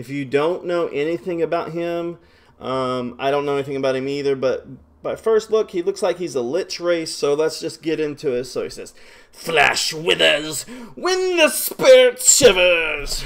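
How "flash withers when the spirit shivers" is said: loud, slow, swooping intoned delivery. Reading a game character's lines aloud: Raxus impression. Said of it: "That's my best Raxus impression".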